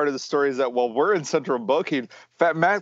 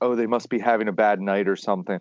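mock mutter under breath, lower pitch; 6 semitones lower than usual. Retelling what the check-in lady said: imitating someone muttering under breath. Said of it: "under her breath".

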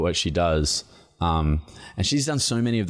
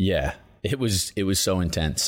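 ordinary talk, nothing marked

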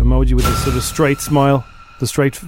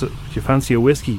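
plain

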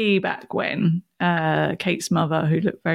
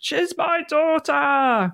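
play-acted sudden shout, very high pitched; 9 semitones higher than usual. Retelling how someone stood up and shouted, retelling a shout. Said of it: "Lance stands up and shouts".

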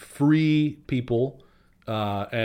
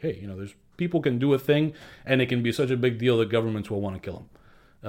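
plain

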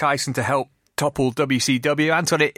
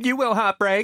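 camp put-on boxer voice, pitched higher; 8 semitones higher than usual. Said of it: "That's my Camp Mike Tyson impression".

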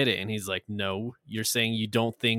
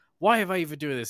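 raised, high-pitched yell; 5 semitones higher than usual. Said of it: "he gets yelled at by his pro bono lawyer".

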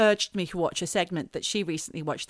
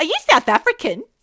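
high, loud, mean mocking tone. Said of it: "Like that".

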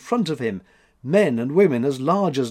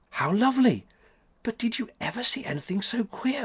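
soft, high, hushed half-whisper; 9 semitones higher, 4 dB quieter than usual. Thekla, watching someone at work in the wood with Max, half-whispering. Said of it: "whispered Thekla".

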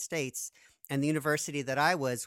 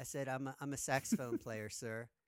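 ordinary talk, nothing marked

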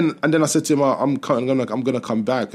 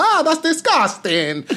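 put-on Italian accent, very high pitched. Retelling what a woman said to him, in an Italian accent. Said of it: "That's my Italian accent".

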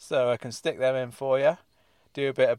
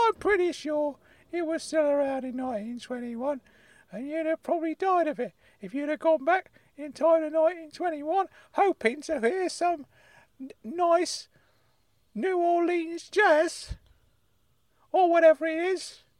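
put-on high, angry old-man voice. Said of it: "Uncle Claude has got so angry".

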